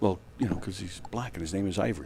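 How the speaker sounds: whispered, hushed, very quiet delivery. Explaining to the others why they want to ask about a name: whispering. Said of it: "Why are we whispering?".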